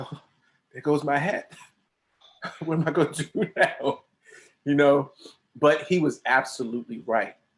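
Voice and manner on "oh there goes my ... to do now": mock sad, forlorn little puppy whimpering lament. Retelling own reaction while watching the car drive off: imitating a sad little puppy dog. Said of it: "like a little puppy dog".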